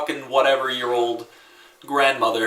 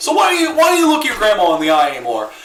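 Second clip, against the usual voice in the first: loud, high, blurted out. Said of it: "Tim just walks up to me and just goes".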